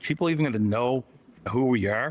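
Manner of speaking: ordinary delivery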